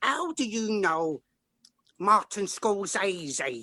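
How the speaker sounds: put-on very slow, drawn-out East End London accent. Retelling a phone call from the agent, imitating Sally's East End accent. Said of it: "She's an East End of London lassie".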